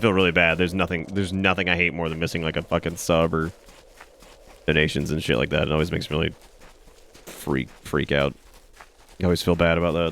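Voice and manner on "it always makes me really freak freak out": deadpan low flat monotone, no lift at all. Telling the audience about missing subs and donations: monotone. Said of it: "I say freak out in, like, the most monotone thing".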